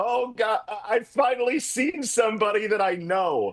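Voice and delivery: mock full panic, frantic announcer voice, stammering. Retelling a broadcaster's words while he shuffles papers: imitating a panicked broadcaster. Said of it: "in his full absolute five-alarm panic".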